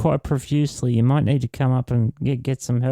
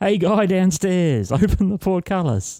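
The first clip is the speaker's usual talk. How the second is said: pitched-up yell in guard voice; 7 semitones higher than usual. Impersonating one of the guards, yelling to the guard downstairs, yelling as a guard. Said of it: "In my best impersonation of one of the guards, I yell".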